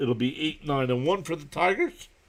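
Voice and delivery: voice cracking and breaking. Giving the score of a Mets game, voice cracking. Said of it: "Whoa, voice crack".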